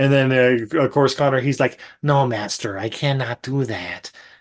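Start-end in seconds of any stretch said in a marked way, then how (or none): 2.0-4.1 quiet, unhurried character voice. Retelling Connor's reply to his master, the speaker does a Lambert voice impression. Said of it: "in that wonderful Lambert voice".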